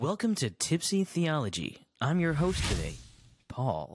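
swooping put-on radio host announcer voice. The host welcomes listeners to the show in his best radio voice. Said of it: "That's the best radio voice I have".

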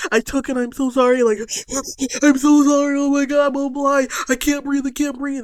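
high, panicky, put-on sobbing like a crying child. Retelling a woman talking to a cop, the speaker imitates her panicky crying. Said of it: "making the sound of crying like when kids do".

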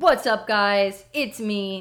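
very slow, mocking vlogger voice. Mocking how amateur YouTubers greet viewers: mocking YouTuber intro voice. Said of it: "They're like".

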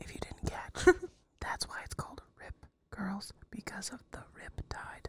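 hushed whisper under the breath, very quiet. Recapping a movie's plot to the others, whispering. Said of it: "Why are you whispering that?".

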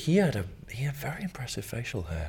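soft, breathless whisper under the breath. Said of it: "I don't know why I'm lowering my voice for that".

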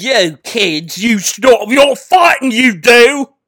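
put-on British soldier voice. Describing security guards breaking up a children's fight, doing a british soldier impression. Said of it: "that's my impression of every single British soldier".

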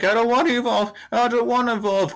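very high, whiny creature character voice.

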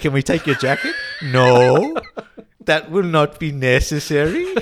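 slow, put-on Spanish accent. Retelling a man's reply in a story: put-on Spanish accent. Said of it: "In his best Spanish accent".

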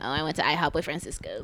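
very low, deep, dropped-down voice. Retelling how Alec walked in and answered, imitating Alec. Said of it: "He doesn't even sound like that".

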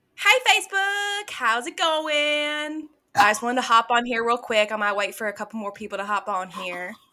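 very loud and dramatic, with "going" stretched out. Asked to open the podcast, the speaker does a Facebook Live mom impression. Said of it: "[name]'s Facebook Live impression".

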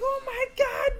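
very high, crying wail.

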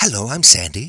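sexy announcer voice. Imitating a former radio coworker's on-air voice: imitating Sandy's sexy radio voice. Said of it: "she had this great, sexy voice".

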